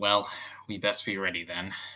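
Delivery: very low, sighing tone.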